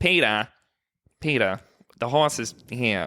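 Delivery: slow, drawn-out cartoon mom voice. Talking about the girlfriend's impressions, the speaker quotes her famous line: Lois impression. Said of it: "My girlfriend can do Lois pretty good".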